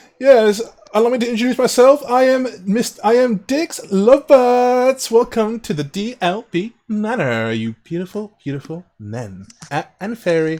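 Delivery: put-on snooty, self-important, high, haughty host voice. Voicing a manor host who welcomes the group: arrogant character voice. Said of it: "arrogant sniff when he, when he says fairy".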